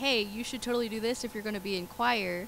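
plain

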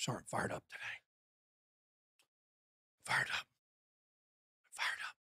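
low, soft whisper.

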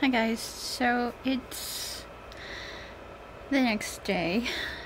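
soft, muffled lisping, mouth stuffed with gauze.

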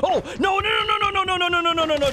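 no shouted repeatedly in rising panic.

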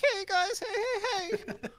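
very high, squeaky, long drawn-out "hey". Showing how another person would imitate Fat Albert: Fat Albert impression. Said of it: "He would be like".

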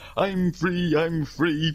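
put-on high, very old man voice. Trying another cartoon voice for the same line: Hunchback of Notre Dame old man voice. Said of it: "really old man".

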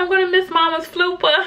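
mock teary crying wail, very high pitch. Retelling the kids' reaction, imitating Alana crying. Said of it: "Alana just starts like crying".

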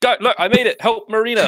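frantic calling out. Player's character in a game calling for help for a companion, frantic.

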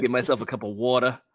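Jersey-style pronunciation. Mid-session, saying they'll get a cup of water, in a jersey accent. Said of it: "My Jersey accent kicking in".

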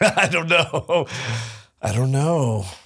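high, slow voice, laughing it off.

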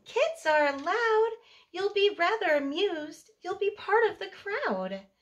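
squeaky, clear, high little mouse voice. Reading a story, the little field mouse speaks to the twins: squeaky clear mouse voice. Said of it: "In a squeaky clear voice".

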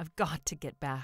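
desperate, urgent delivery. Speaking to a stranger as the church bells ring, desperately. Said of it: "George said desperately".

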